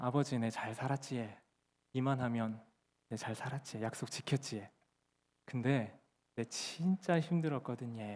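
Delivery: awkward, imperfect, clumsy put-on Korean country dialect. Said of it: "제가 도리어 이 어설픈 사투리를 하니까".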